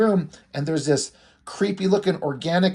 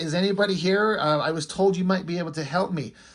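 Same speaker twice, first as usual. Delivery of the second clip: usual speaking voice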